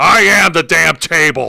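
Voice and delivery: deep, rough, low, raspy put-on voice. Redoing the table's line after the announce desk does not break, in a Jesse Ventura voice. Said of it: "Let me do it in Jesse Ventura's voice".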